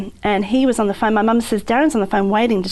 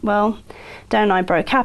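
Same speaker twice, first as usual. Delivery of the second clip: ordinary talk, nothing marked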